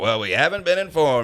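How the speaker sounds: mocking, parroting tone. Retelling walking down a train mocking a passenger's complaint: mocking imitation of a passenger. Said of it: "kinda just mocking this guy".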